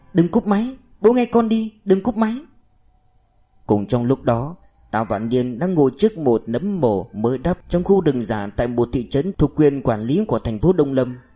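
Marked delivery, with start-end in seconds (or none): 0.1-2.3 very high, frantic, panicked shout. A girl begs her father not to hang up the phone: shouting in panic. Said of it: "Cô hét lên một tiếng đầy hốt hoảng".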